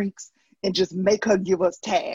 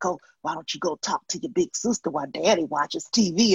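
loud, projected whisper; 2 semitones lower than usual. Speaker retells what she overheard her dad say; imitating dad whispering. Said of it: "I hear him whispering like".

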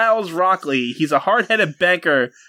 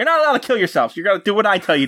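mock hero voice, stern, commanding and scolding; 4 semitones higher than usual. Retelling a comic where Batman jumps into a car: imitating Batman yelling. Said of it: "starts yelling at them".

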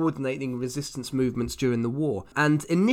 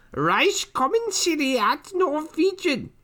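put-on witch voice, much higher and louder; 3 dB louder than usual. Speaker pronouncing a long German word for a co-host, in a Macbeth witch voice. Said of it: "You sound like a witch from Macbeth".

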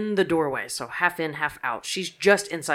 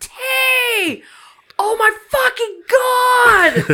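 put-on screaming, higher and louder; 11 dB louder than usual. Retelling a scream heard from upstairs: imitating Poodle screaming. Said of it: "I can hear Poodle screaming".

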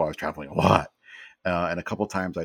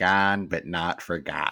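attempted Chicago accent. Read out the words below a faded full-size photo, in your best chicago accent. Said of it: "in my best Chicago accent".

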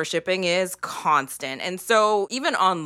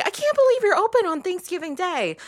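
very high, patronising, condescending acted-out tone; 13 semitones higher than usual. Imitating people talking to workers open on Thanksgiving Day, mock-condescending. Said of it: "people can then condescendingly say".

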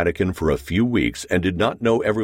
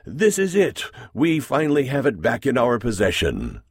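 triumphant, victorious, pitched-up delivery; 5 semitones higher than usual. A man puts away his glasses and announces to two men: triumphant declaration. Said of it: "declared triumphantly".

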